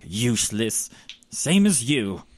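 scornful, dismissive scoff. Narrating a scene, the speaker voices a character's reply: scoffing. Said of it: "He scoffs".

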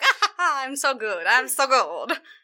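put-on vaguely Italian accent, chuckling through. Retelling a drunk character laughed at in a tavern: Italian-ish accent. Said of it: "he became Italian-ish".

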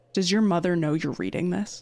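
very stern, severe, disapproving, reproachful tone. Retelling what a teacher asked about a book being read: imitating Missus Posen, very stern. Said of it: "very sternly".

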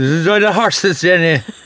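put-on Kerry Irish accent. Retelling what someone said to a wife on a visit: imitating a Kerry accent. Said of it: "have you ever heard the Kerry accent?".

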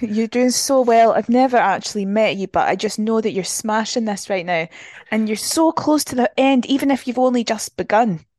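fake, put-on Scottish accent, cheering tone. Recording a cheering message for Eleanor running a marathon, in a put-on Scottish accent. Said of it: "Should we do it in Scottish?".

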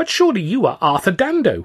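slight, thin, reedy little voice, way up high. A stranger addresses the narrator, thin, reedy little voice. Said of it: "a thin, reedy little voice said".

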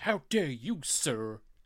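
very slow, deliberate, every word drawn out. Quoting the reply in the same film scene: Harrison Ford impression. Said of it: "than your Harrison Ford".

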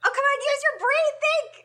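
high-pitched shouting with voice pushed way up. Pushing someone to answer a question about the show, yelling. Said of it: "Stop yelling at me!".

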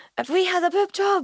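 shrill, very high-pitched shouting. Retelling waking up after surgery: imitating someone shouting. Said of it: "I was pure shouting".

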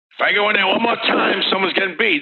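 high-pitched, angry barking voice.

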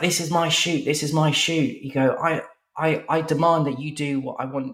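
heated, angry shouted rant. Retelling a man squaring up to another at a shoot, retelling angry shouting. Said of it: "starts shouting at each other and he's like".

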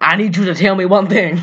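preacher voice, Southern. Retelling a scene where a man questions a dying guy: Dusty Rhodes impression. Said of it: "He turned into the American Dream".

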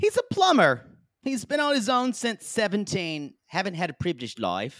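poor attempt at South African accent. Describing a man named Wayne to the group, in a bad South African accent. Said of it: "that's not South African, I'm sorry".

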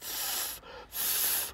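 breathy, hissing cat sound.

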